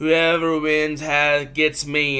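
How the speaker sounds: ordinary talk, nothing marked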